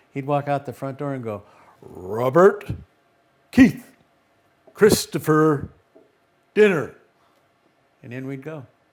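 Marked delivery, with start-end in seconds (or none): 1.9-7.0 very loud, slow, booming, drawn-out shout. Retelling how he called the children in for dinner from the front door, booming voice. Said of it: "he had this booming voice".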